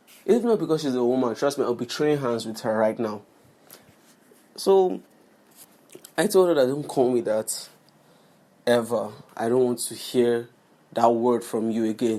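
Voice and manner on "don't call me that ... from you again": normal talking voice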